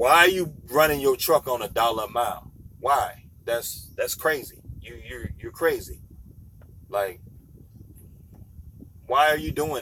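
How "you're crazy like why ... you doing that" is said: ordinary talk, nothing marked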